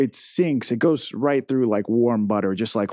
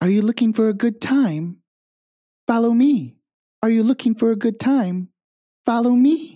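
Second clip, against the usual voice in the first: very high put-on female voice; 11 semitones higher, 4 dB louder than usual. Narrating a scene, voicing a Kenku that sounds like a woman, in a woman's voice. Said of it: "one of them sounds like a woman".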